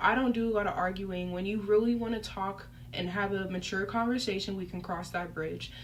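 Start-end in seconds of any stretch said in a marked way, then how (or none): none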